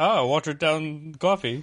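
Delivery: posh British-sounding Scandinavian accent. Describing the Scandinavian red eye in a Scandinavian accent sounding posh British. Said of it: "your Scandinavian accent is posh British one".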